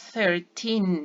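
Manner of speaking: put-on thirteen with weight on second syllable, teen. Contrasting thirty and thirteen for learners: stress on teen in thirteen. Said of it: "sílaba más fuerte está en el teen".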